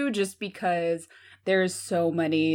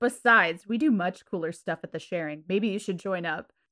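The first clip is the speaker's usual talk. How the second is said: ordinary delivery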